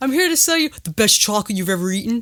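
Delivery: dead straight, plain, serious delivery. Imagining an actor redoing an old line in the studio: Shia LaBeouf impression. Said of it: "it would be like".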